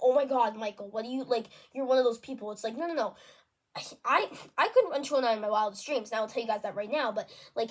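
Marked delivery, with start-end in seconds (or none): none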